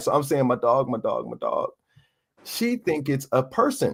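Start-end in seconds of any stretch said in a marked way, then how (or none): 0.5-1.7 put-on bawling, crying out through sobs. Retelling breaking down in her lap after a phone call, reenacting sobbing. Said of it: "just bawling in her lap, just crying".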